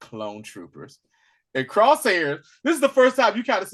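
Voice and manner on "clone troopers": put-on smug British accent, much lower, quieter. Retelling an indifferent guy noticing other clone troopers, in a put-on smug British accent. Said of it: "that smug British accent".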